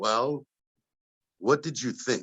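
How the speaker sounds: voice dropped deep and low. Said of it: "in that [name] voice".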